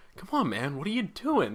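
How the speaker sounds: soft, disappointed, reproachful tone of voice. Showing how a parent could talk to their kid: mock disappointed parent tone. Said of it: "you can use that tone on your kid".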